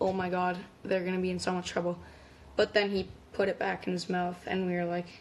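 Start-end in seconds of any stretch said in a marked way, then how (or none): none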